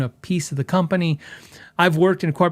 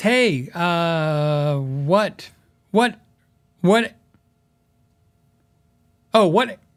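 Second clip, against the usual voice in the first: slow speech broken by hiccups. Reading a viewer's question aloud; hiccuping while talking. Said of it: "I'm hiccuping and trying to talk".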